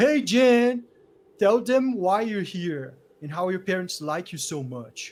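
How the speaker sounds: very loud, mocking, jeering schoolyard bully taunt. Voicing the school bully who taunts Jan: taunting school bully voice. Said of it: "the bully of the school".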